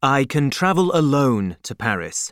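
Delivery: plain reading voice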